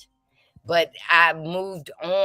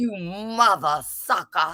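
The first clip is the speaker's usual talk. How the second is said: slow, drawn-out preaching sermon voice. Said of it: "I'm the cussing pastor".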